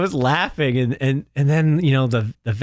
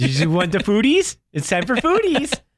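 put-on silly dopey baby talk, much higher; 6 semitones higher than usual. Speaker retells how they call their dog to eat: silly baby talk to dog. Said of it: "I'm talking like an imbecile to this dog".

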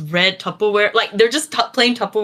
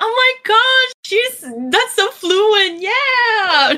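very high, very slow, effusive gushing; 12 semitones higher than usual. Retelling relatives clapping at a foreigner's greeting: imitating excited relatives. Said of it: "They're like".

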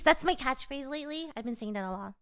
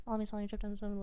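very fast, lower, much quieter; 3 semitones lower, 7 dB quieter than usual. Repeating a gamer's catchphrase to co-hosts, rattling off a catchphrase fast. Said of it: "He says it really fast".

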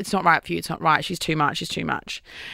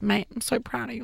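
mock teary, crying man's voice; 4 semitones higher, 7 dB quieter than usual. Retelling how the dad cried at his son: imitating a crying dad. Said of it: "he cried and he was like".

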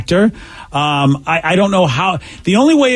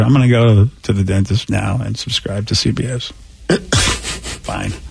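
low, soft, mumbled mock grudging drone. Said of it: "that was the voice I just heard".

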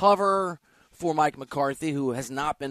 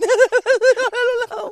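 mock nervous blurt, very high and very loud; 9 dB louder than usual. Retelling Tom's answer when asked if he called the speaker old: mock-nervous Tom imitation. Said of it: "And Tom nervously goes".

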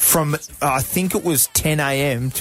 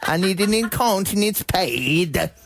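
clumsy Italian accent, high and slow, pad drawn out; 6 semitones higher than usual. Giving an accent a go despite not being good at it: attempted accent. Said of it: "I'm not very good at the accent".

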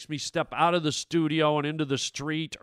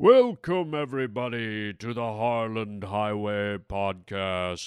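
deep, ominous, doom-laden, foreboding put-on voice; 5 semitones lower than usual. Opening the podcast with a put-on deep voice. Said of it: "Why am I doing such a deep voice?".

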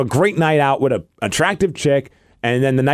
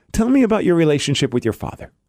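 put-on solemn, earnest, very serious therapist manner; 3 semitones higher than usual. Retelling a friend leaning in to ask a question: imitating a serious therapist tone. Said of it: "looks at her in a very, um, serious way".

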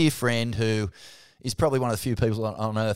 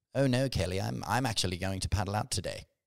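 mock courteous, polite, well-mannered voice; 6 dB quieter than usual. Imitating a surfer who tells Kelly he will paddle out: polite imitation of Louis. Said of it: "He's very polite, Louis".

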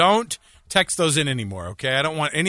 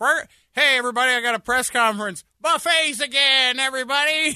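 announcer voice pitched way up; 10 semitones higher than usual. Retelling the governor's press conference on buffets reopening: imitating Gary Herbert. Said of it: "I love how Gary Herbert's like".

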